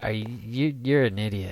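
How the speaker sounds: usual speaking voice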